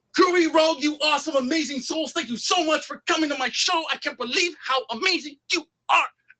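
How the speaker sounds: very high, aggressive, hostile-sounding tone. Explaining reverse trash talk, giving an example compliment in an aggressive trash-talk tone. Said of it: "doesn't have to be that aggressive. I'm sorry".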